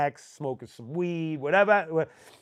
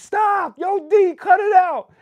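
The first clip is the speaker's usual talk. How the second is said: very high, very loud, slow, drawn-out yelling; 9 dB louder than usual. Retelling how the crew yelled at a friend through the fence: imitating someone yelling. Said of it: "yelling at him through the fence".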